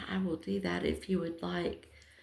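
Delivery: mock whispering. Retelling a helper's offer to change the battery: imitating someone whispering. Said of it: "she starts whispering".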